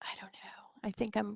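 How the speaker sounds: whispering. Speaker thinks aloud in the middle of an explanation, whispering.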